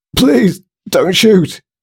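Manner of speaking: very high, terrified sobbing, begging and pleading. A small man behind a desk begs a man with a rifle, sobbing in terror. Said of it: "sobbed a voice in terror".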